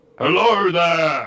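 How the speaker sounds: grand, big, booming voice. A character calls out to hidden whisperers, in a big booming voice. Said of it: "In a really big booming voice".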